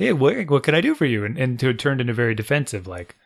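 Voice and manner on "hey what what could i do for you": mock easygoing, neighbourly, friendly and welcoming tone. Imitating how people used to answer the phone: imitating a friendly phone greeting. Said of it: "It used to be very friendly".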